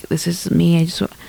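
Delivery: put-on groggy just-got-out-of-bed voice. Retelling a voice memo from a girl on a dating app: imitating a just-got-up-out-of-bed voice. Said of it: "a just got up out of bed voice".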